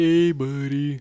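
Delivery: called out, bright and high-pitched. Describing how a man sounded, the speaker imitates him: Elf narwhal voice. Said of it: "he sounded like the narwhal in Buddy the Elf".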